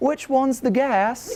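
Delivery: put-on very high, polite, nice-sounding British accent. Retelling a story about a group of friends, the speaker quotes Emma, imitating Emma's nice British accent. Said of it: "in a nice British accent".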